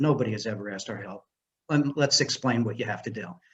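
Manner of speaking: ordinary talk, nothing marked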